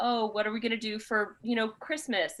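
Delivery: ordinary delivery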